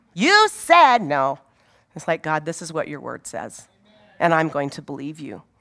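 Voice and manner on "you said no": raised, high, accusing bratty whine. Showing how not to come to god in prayer: like a spoiled little brat. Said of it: "like a spoiled little brat".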